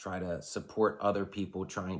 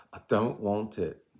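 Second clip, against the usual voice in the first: put-on intentionally poor British accent; 2 semitones higher, 5 dB louder than usual. Quoting a famous fictional leader while discussing leadership, bad British Jon Snow impression. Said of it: "That's my bad British accent".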